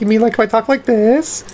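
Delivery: put-on girly Valley Girl style voice. Asked to switch to girly, the speaker tries it out: girly voice. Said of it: "it to girly".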